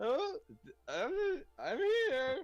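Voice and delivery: very high, slow, drawn-out tiny gnome voice. Voicing a little gnome who hears someone call for a healer: gnome voice. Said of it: "little gnome ... and he goes".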